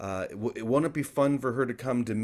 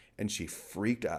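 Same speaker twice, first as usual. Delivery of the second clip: ordinary talk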